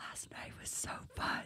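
soft, unvoiced whisper. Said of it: "I just whisper".

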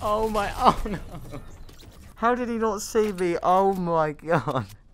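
breaking up with high, helpless laughter throughout. Reacting as Batman runs right past without seeing you, laughing uncontrollably. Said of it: "I can't stop laughing".

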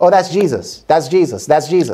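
ordinary talk, nothing marked

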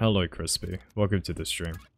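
lifeless, drained voice. Streamer greeting a viewer after a rough day at uni, sounding dead tired. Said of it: "I sound dead right now".

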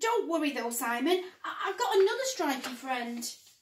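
ordinary delivery, nothing marked

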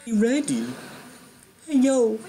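very high, sing-song, swooping, awful put-on voice. Trying out an impression while booking a wrestling game: Irwin impression. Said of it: "I'm trying to do an Irwin impression".

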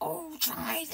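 put-on high, witchy voice. Speaker imitates how their mum sometimes spoke, imitating Mum's witchy poo voice. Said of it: "Every now and then she would go".

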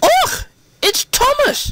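very high, sudden exclaiming cry. Donald recognizes who is crying for help in the snow; exclaimed. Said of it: "exclaimed Donald".

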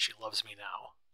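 ordinary delivery

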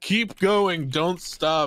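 urgent yelling call. Retelling how he yells at the driver to keep going: imitating Dundee yelling. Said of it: "he yells at the driver, he's like".

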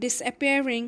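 ordinary delivery, nothing marked

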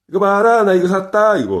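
very high, proud, show-off bragging tone. Explaining a Korean way of talking after buying a ring, mock-boastful tone. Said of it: "이 말투. 이게 자랑하는 거죠".

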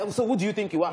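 plain

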